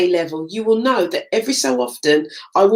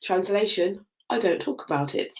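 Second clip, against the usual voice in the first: usual speaking voice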